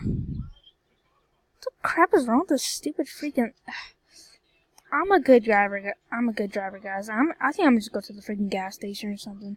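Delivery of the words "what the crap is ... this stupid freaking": angry, frustrated, much higher pitch. Streamer complaining to viewers about lag, mad. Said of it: "I'm just like really mad at this freaking lag".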